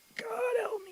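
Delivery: very high, barely voiced croak. Retelling a plea for help in a terrorized state: imitating a croak. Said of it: "And I just croaked out".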